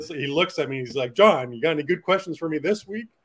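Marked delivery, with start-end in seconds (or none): 1.1-3.0 playful joking tease, loud and pitched up. Retelling what he said to the reporter: imitating a joking manner. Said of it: "he did it in a very joking manner".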